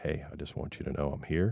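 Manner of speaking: soft whispering. Explaining that someone close needn't yell, demonstrating a gentle whisper. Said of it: "and it's a whisper".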